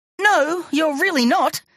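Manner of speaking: shrill, very high-pitched shouted voice. Touched on the nose by a tentacle, the narrator jumps clear, shouting. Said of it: "I shouted".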